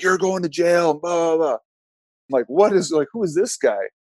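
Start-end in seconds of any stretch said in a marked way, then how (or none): 0.0-1.5 put-on screaming, much higher. Acting out a man who climbed the glass and screamed at him: retelling someone screaming. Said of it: "And he's screaming at me".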